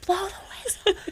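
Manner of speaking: mock stage whisper, whispered and breathy. Retelling a stopped-up play, imitating own past screaming at the ref. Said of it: "screaming at the ref".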